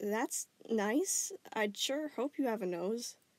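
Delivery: especially confused, baffled, puzzled tone. Answering a stammering caller on the phone, sounding especially confused. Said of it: "Connie sounded especially confused now".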